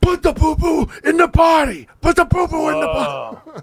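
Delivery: very high, furious, scared, frantic shouting. Recalling yelling down at him while smacking your hand, retelling an angry, fearful yell. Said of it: "Just nothing but anger and fear coming out of me".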